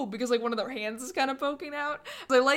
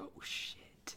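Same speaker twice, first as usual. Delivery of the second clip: quiet mutter under the breath, quieter. Acting out the Ghost of Christmas Yet to Come: muttering under his breath. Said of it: "under his breath".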